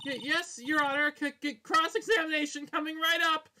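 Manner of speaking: nervous stutter. Voicing the defense answering the judge in a courtroom: nervous stuttering. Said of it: "more nervous than Phoenix was".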